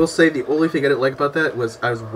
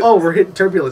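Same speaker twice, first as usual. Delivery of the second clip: usual speaking voice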